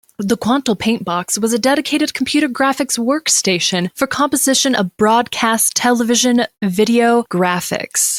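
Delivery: broadcast news-anchor reading voice. Reading a wiki entry aloud to the other speaker, in a newscaster voice. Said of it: "That was an excellent newscaster voice".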